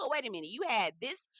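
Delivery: normal talking voice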